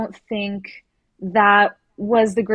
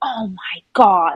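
put-on irritated, exasperated, angry outburst. Retelling how he reacted to her questions: imitating an angry exclamation. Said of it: "just getting angry at her for asking him questions".

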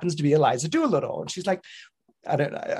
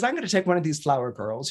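plain

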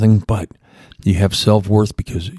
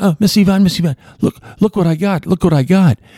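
mock very high, thrilled, excited gushing voice; 11 semitones higher than usual. Retelling a man bursting into an office waving a paper, imitating excited speech. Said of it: "he was waving the paper excitedly".

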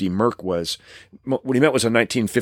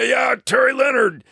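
very high, gravelly, badly done put-on macho rasp; 13 semitones higher than usual. Telling about a phone call from Terry Leonard, doing a gravelly Terry Leonard impression. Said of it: "you got to try to imitate him".

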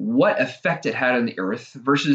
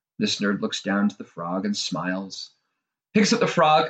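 usual speaking voice

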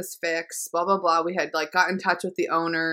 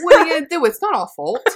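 very high, loud, put-on English accent; 9 semitones higher, 8 dB louder than usual. Repeating another speaker's line back to them, in a British accent. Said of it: "from Jersey to England so quick".

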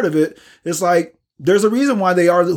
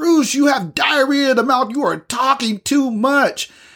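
acted-out mock meltdown, much higher pitch; 7 semitones higher than usual. Retelling how someone melted down on the speaker, acting out the meltdown. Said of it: "she literally just melted down on me".

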